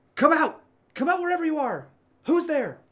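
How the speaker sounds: commanding call in a very high pitch. A narrator voicing a woman who calls out, in a very commanding woman's voice. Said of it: "it sounds like a very commanding voice".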